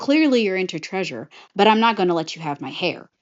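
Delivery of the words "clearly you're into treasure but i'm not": usual speaking voice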